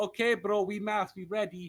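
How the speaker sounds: put-on Russian-accented voice. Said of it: "you're making Wade sound like he's Russian".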